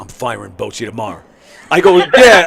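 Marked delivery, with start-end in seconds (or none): 0.0-1.2 low, hushed half-whisper, very close. Speaker retells what a woman half-whispered to him as she came back: retelling a half-whisper. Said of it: "she whispers".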